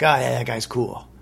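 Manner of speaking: ordinary talk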